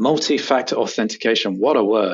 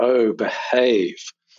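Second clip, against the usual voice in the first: put-on cheeky catchphrase voice. Quoting the catchphrase the report title is based on: Austin Powers catchphrase voice. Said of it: "based on the Austin Powers catchphrase".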